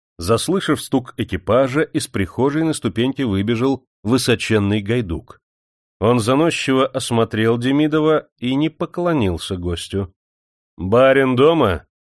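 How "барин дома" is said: stern, severe tone. Nikolai Nikitich questions the haughty footman at the porch, stern. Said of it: "сурово спросил его Николай Никитич".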